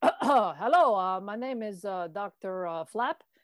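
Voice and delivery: put-on Quebecois French accent. Describing a character who has a bit of a Quebecois accent, as Dr. Flap. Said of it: "they have a bit of a Quebecois accent".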